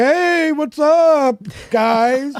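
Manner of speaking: play-acted spaced-out, stoned voice, very high, slow. Joking about sounding high like Bruce: imitating Bruce being high. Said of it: "If I was high like Bruce, I'd be like".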